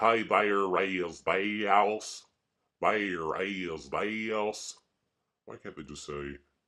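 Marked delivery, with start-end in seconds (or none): 0.0-4.7 put-on very slow Kentucky accent, long drawn-out "this". Mocking how people from Kentucky talk: imitating a Kentucky accent. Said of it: "like in Kentucky, they have to say".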